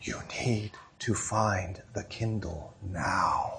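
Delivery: very soft, slow, hushed, quiet voice. Retelling a frustrated mom scolding her daughter: imitating a mom speaking very softly. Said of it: "very softly".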